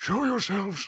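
theatrical stage whisper, very high-pitched. Standing in front of the group with axe unsheathed, calling out in a dramatic whisper. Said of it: "whisper dramatically".

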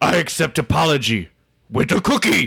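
gruff, growly puppet monster voice. Accepting an apology and offering a cookie, in a Cookie Monster voice. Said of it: "It's an easy voice to do".

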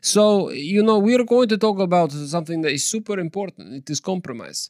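put-on Russian accent. Introducing the episode's topic while keeping up a made-up bit, fake Russian accent. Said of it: "continuing that accent".

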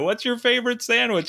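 put-on screaming. Retelling how a man in a parade crowd called out to Anna on video, retelling a scream. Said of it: "he screams at her on video".

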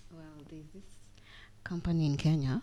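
deliberately low quiet voice. Starting to share news while copying the mood-setting low voice: put-on lowered voice. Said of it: "Why are you toning down your voice?".

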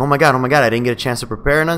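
usual speaking voice

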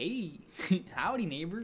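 put-on Midwestern accent. Mocking how people from Minnesota and Michigan talk: imitating Minnesota and Michigan accent. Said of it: "Minnesota and Michigan are just like".

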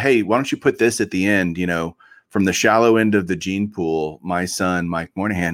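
normal talking voice

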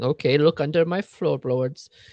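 French accent in a put-on voice.

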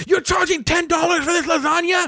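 very high, shrill, spit-flying screaming. Storyteller acting out a man in line screaming at the kid, imitating someone screaming. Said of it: "screaming at the kid".

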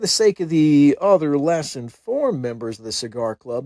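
ordinary talk

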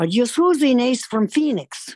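put-on little, high-pitched Irish accented voice. Retelling what a nun said to the speaker, in a little irish voice. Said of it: "this little Irish voice".

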